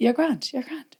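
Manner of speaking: gentle, soothing, patronizing voice. Retelling Shane reassuring her before meeting someone she knew; mock-patronizing Shane. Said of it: "Like as if I was some sort of fucking nana".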